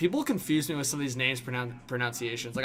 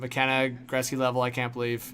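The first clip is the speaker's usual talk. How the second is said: ordinary delivery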